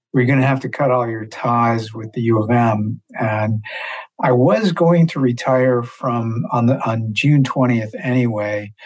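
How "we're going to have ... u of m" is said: ordinary delivery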